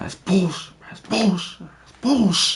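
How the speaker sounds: play-acted very high, furious, raging yelling, repeated. Retelling a confrontation with a secretary, reenacting his own angry outburst. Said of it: "And I started like crashing out again".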